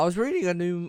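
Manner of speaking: sudden voice crack pitching up mid-phrase. Speaker switching topics while a game wave plays out: voice cracking. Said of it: "the voice crack".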